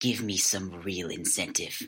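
voice dropped very low and deep. Narrating a handcuffed character leaning in to speak, in a very low voice. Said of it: "in a very low voice".

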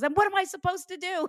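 very high, fast, exasperated tone. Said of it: "He goes".

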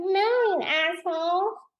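put-on very high-pitched little baby-talk voice. Speaker retells Laura Lee laughing off a man's remark: Laura Lee's little baby voice. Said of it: "In her little baby voice".

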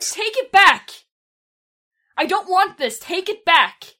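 very high, loud, panicked shriek. Playing a character who regrets accepting something very bad, screaming. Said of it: "I'm screaming at this point".

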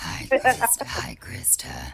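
slow, breathy, whispered demonic voice. Retrying a requested name greeting: satanic voice from House Bunny. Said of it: "will you say my name in the satanic voice".

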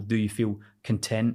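ordinary talk

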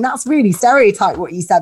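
ordinary talk

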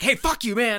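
very high, obnoxious, in-your-face talk-radio attitude. Describing the radio host's attitude in the movie: imitating an in-your-face radio host. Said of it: "a very in your face host that's just kind of like".

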